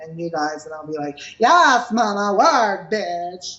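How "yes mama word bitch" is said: campy, very slow, drawn-out voice. Retelling how they talk to friends: Kiki voice. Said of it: "the Kiki voice".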